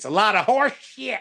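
Southern Arkansas accent. Answering a co-host's question, suddenly switching into an Arkansas accent. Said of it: "now that you sound like you're from Arkansas".

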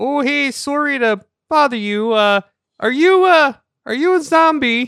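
very high, drawn-out yell. Playing a character who calls toward a closed door: yelling toward a door. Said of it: "I'm gonna yell".

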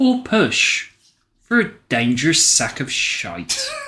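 deadly serious, solemn, swooping philosopher's voice. James delivers a sentence another speaker wrote, in a deadly serious philosophical voice. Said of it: "deliver in deadly seriousness and your best philosophical voice".

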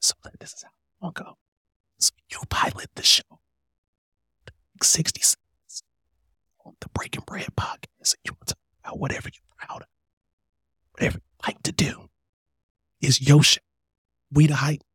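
breathy, soft, whispered ASMR murmur. Podcast host explains the sixty-second segment close to the mic, soft ASMR voice. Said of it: "I'm going to put my regular voice back on".

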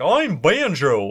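put-on goofy Southern accent, loud and big. Recalling how Banjo talks in Diddy Kong Racing, in Banjo's southern accent. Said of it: "he's got a wicked southern accent".

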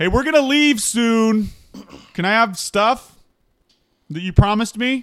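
very high-pitched, loud shouted yell. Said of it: "I just start yelling".

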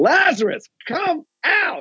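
put-on commanding call, shouted, pitched very high. A speaker retelling a scripture scene, calling to a dead man: retelling a shouted command. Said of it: "to shout out".

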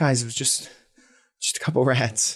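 nervously laughing through words. Ben brushes it off to the group, nervous laughter. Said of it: "just kind of like nervously laughs".

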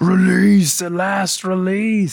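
play-acted screaming, pitched very high. Recapping a game scene as Bartandalus dips into the pool, Bartandalus screaming, retold. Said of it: "And he's like screaming".

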